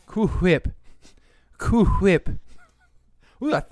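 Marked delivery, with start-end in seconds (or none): 0.2-2.3 high-pitched cartoon voice, each word drawn out. Repeating a line from a cartoon scene: Stewie impression. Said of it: "I nailed that Stewie impression".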